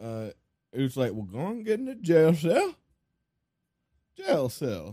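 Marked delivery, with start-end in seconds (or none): 1.1-4.9 put-on, swooping, dopey, dim-witted cowboy voice. Imitating a cowboy character shown as messed up in the head: dim-witted cowboy character voice. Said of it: "It's easier to say in that voice".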